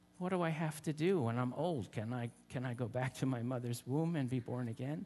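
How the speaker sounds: usual speaking voice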